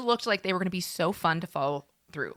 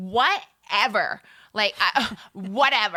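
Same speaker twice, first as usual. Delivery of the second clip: put-on dismissive drunk woman voice, much slower; 3 dB louder than usual. Retelling how a drunk woman brushed off a safety warning, imitating her dismissive voice. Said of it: "I'm putting on the voice".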